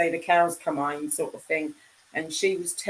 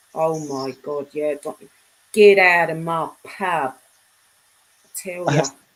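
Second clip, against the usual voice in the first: loud, put-on Cockney accent; 5 dB louder than usual. Speaker shows how a woman they're discussing talks: imitating a Cockney accent. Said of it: "She talks like that".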